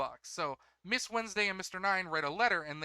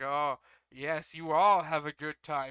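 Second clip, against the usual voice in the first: put-on sinister tone, evil and unsubtle; 3 semitones lower, 4 dB louder than usual. Retelling a scene where a character makes an evil face, imitating Igarappoi's evil unsubtle tone. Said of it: "super unsubtly".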